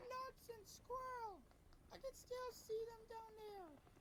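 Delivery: squeaky puppet-like voice. Voicing Natasha while another person listens, Natasha sounding like Elmo. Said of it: "Why does Natasha sound like Elmo?".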